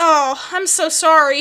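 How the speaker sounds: sorrowful speech. Retelling a customer's reply after a refused tip: imitating a sad customer. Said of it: "he looks down, really sad".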